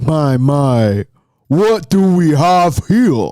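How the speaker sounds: deep voice, dropped low. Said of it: "deep voice off screen".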